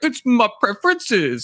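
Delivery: very high-pitched voice, catchphrase-style delivery. Recalling something Emmett said many times: imitating Emmett. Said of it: "when Emmett's like".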